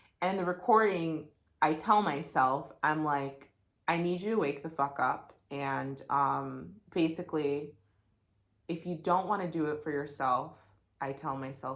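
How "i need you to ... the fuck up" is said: ordinary talk, nothing marked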